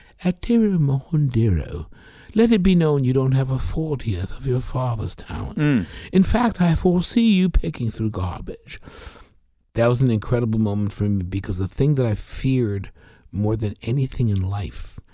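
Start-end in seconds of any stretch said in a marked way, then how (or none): 0.2-8.8 fake, put-on British accent. Quoting an answering-machine message left by a caller: fake british accent. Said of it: "puts on a fake British accent saying".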